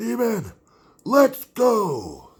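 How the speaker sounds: very loud, very high, swooping call. Showing how they call out for their dog: really loud call. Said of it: "Like that, really, really loud".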